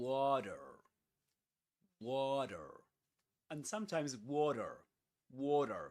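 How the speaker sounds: water pronounced with an American accent. Speaker contrasts British and American ways of saying a word, in an American English accent. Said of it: "In American English".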